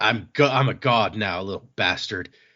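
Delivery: jerky, obnoxious, gloating, taunting villain voice. Retelling a villain's boast: imitating a villain being a dick. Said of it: "this guy cannot talk without being a dick".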